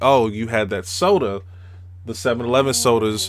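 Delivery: ordinary talk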